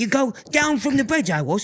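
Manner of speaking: lilting, springy, light and bouncy delivery. Showing how to say a phrase, demonstrating a light, bouncy delivery. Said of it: "you lighten it up and keep it bouncy".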